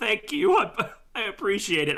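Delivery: put-on tearful voice. Playing a character taking rags from a hobgoblin: fake crying. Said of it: "wiping my eyes from the fake tears".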